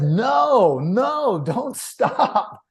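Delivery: high, laughing, delighted tone.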